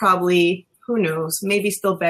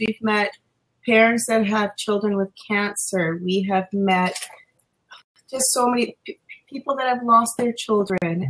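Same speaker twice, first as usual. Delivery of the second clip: choked-up, voice catching, nearly crying. Speaker sharing a personal experience, close to tears. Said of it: "and I'm gonna cry".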